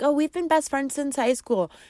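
high, put-on girly voice. Describing the girl with high school best friends, in a put-on voice for her. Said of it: "I did it in that voice".

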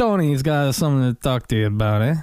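put-on New York Italian accent. After being told you sound new york italian, show it off: new york italian accent. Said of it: "You sound like New York Italian".

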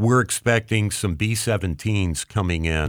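ordinary talk

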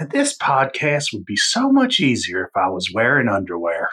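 put-on swooping, animated woman's voice. Introducing himself on the podcast, imitating a woman from the film. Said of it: "you switched it up with someone else from the film".

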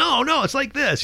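mock shouting, pitched very high. Retelling a bandmate on stage correcting a riff: imitating someone yelling. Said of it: "yelling at me".

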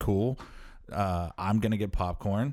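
plain

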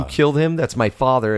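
ordinary delivery

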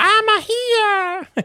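very high voice with "here" drawn out. Joking about silly-voiced demons: Jar Jar voice. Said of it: "Now it's Jar Jar".

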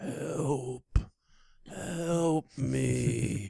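creaky, groaning moan, drawn-out "me". Acting out a kneeling man moaning for help: imitating someone moaning for help. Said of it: "on his knees fifty feet in front of me moaning".

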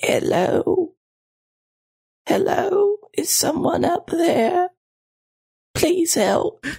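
very high, weak, enfeebled, feeble voice. Game master voicing someone calling out as the players open the door, weak, enfeebled voice. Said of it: "a weak, enfeebled voice calling".

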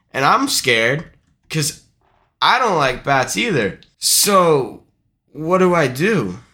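plain

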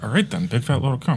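mock muttering under the breath. Speaker acts out what a man said: retelling a line muttered under breath. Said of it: "He just says it like under his breath".

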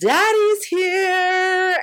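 very high, shrill, stretched-out scream. A man walks in and screams to the outdoor bar: retelling a scream. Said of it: "screams to the outdoor bar".

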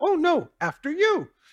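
very high, squeaky, tiny cartoon critter voice. Retelling a cartoon where two characters insist the other go first: little cartoon voice. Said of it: "his little voice".

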